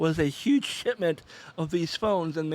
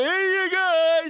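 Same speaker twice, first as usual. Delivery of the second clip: shrill, high, loud, drawn-up hollered call; 13 semitones higher, 7 dB louder than usual. Retelling how their dad joked in the grocery store, doing a Sloth from The Goonies impression. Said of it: "basically trying to do an impression of Sloth from the Goonies".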